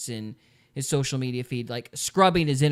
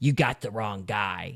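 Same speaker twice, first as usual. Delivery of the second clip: very creepy, menacing, low voice; 4 semitones lower than usual. Retelling what a man said into the phone before shutting it off, imitating Crooks's creepy voice. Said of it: "it's like a real creepy voice".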